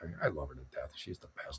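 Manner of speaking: very quiet, hushed, barely-there whisper. Speaking live at two in the morning while visiting his parents, whispering. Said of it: "I got to whisper when I say that".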